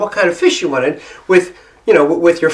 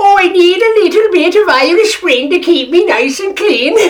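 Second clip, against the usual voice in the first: very high put-on leprechaun voice; 12 semitones higher, 4 dB louder than usual. Joking around with a group of guys, fake leprechaun accent, Irish Spring. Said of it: "I put on this really, you know, terrible, fake, leprechaun-y kind of accent".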